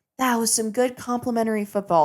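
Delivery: plain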